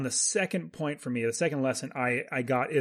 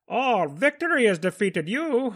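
raised-pitch movie villain voice; 8 semitones higher, 3 dB louder than usual. Quoting a favorite line from the Batman movies: Bane voice. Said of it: "the way he says it was rather fun".

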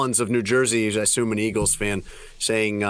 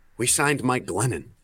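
imitated mutter under the breath, aside. Retelling a player's remark at a press conference: imitating a mutter under breath. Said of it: "under his breath".

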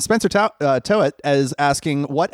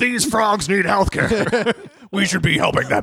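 high-pitched, all worked-up rant; 6 semitones higher than usual. Joking about health care in a socialist version of an Alex Jones voice. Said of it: "my Alex Jones voice".

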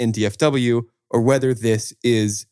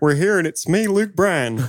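a heavy put-on Alabama accent, pitched up high; 7 semitones higher than usual. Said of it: "where we all talk like we're from Alabama".

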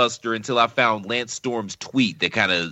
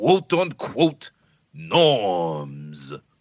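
put-on old English accent; 2 semitones lower than usual. Reading a tweet aloud to the others: old English accent. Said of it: "read the tweet in my old English accent".

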